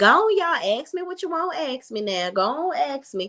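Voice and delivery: high, slow, play-acted coy teasing tone. Describing how she acts when asked about him: mock-coy teasing. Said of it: "she does it in her little coy little way. She'll be like".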